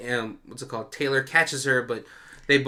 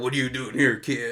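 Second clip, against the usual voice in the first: put-on Texan accent. Acting out a line in what the speaker calls a texas accent. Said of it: "That's my Texas accent".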